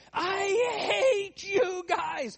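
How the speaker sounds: very high, slow, drawn-out screamed wail with long I. Telling how the last one down the slope ended up on the ground, imitating someone screaming. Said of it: "and he's screaming".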